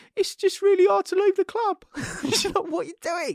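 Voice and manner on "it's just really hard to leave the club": play-acted passionate, high, loud whimpering lament. Mocking what someone said at a press conference; mock whimpering. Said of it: "when he's whimpering in the press conference".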